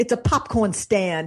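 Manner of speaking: put-on strong, thick Boston accent. Retelling what the man who ran GE told him at their first meeting, Jack's thick Boston accent. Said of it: "he's a thick Boston accent".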